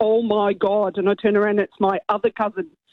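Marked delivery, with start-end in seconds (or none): 0.0-1.0 put-on thick Derry accent, much lower, slower. Retelling hearing a cousin's exclamation on St. Patrick's Day, in a thick Derry accent. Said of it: "in a really thick Derry accent".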